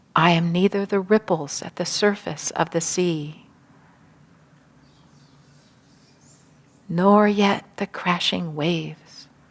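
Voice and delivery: whispering. Leading listeners in repeating an affirmation together, whispering. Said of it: "Now in a whisper".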